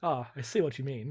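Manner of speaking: put-on expressionless, flat, matter-of-fact deadpan delivery. Describing an episode's bar fight, quoting Worf, Worf deadpan impression. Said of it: "Worf just deadpan goes".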